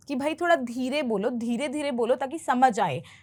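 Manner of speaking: ordinary talk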